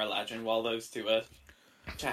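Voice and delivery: ordinary talk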